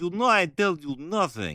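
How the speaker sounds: slow, high put-on Slavic accent. Voicing the chief guard as the speaker imagines him, Crichton in a Slavic accent. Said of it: "I always imagine him with like that kind of Slavic voice".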